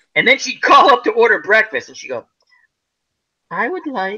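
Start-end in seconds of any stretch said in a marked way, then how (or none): 3.5-4.2 really nice, sweet, polite ladylike voice. Retelling how a swearing woman ordered breakfast, imitating a sweet ladylike voice. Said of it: "really nice, ladylike voice".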